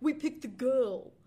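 put-on belted, half Australian, half American accent. Quoting both quiz teams at the final question, warped Australian-American accent. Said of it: "I couldn't decide whether I was doing an Australian accent or an American accent".

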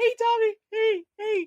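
over-nice, sugary, very high voice. Imitating a wrestler who greeted tommy after insulting him: imitating an over-nice greeting voice. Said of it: "he did his ricocheted voice and everything".

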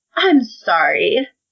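mock snide, insincere, sarcastic tone. Acting out Rand's lines from the book: sarcastic Rand voice. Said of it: "Rand kinda talks like the way I just did".

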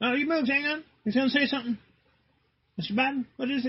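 high, eager mock reporter voice calling out.

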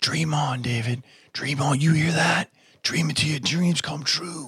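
high, frantic, acted-out screaming. Retelling a friend screaming through the phone at a concert: imitating someone screaming. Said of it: "he's screaming through the phone telling me".

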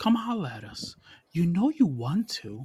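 high-pitched, creepy voice. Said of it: "I'm using this creepy voice".

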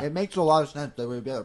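talking with mouth full. Discussing convention releases while eating a sandwich, talking with mouth full. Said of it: "it sounds like my mouth is full".

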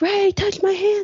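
put-on drunk, very high-pitched, drawn-out holler. Retelling how a man in the front row yelled to ray, retelling a drunk yell. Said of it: "he's yelling".

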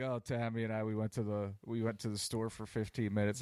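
ordinary talk

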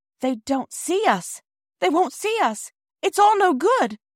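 very high, rising, despairing outcry. As the train approaches and the children wave, Bobby is crying out. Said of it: "cried Bobby".

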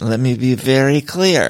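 play-acted mushy, slow, slurred drawl. Recounting a woman's unclear statement: imitating Denise slurring. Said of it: "she was slurring".

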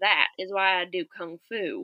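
put-on deep Southern accent. Quoting a man seen sitting at his desk in a video: very deep southern accent. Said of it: "very, very deep Southern accent".

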